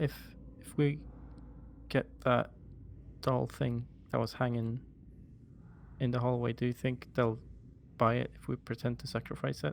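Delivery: soft, hushed whisper. Speaking to Bindel, whispering. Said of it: "I'm gonna whisper to Bindel".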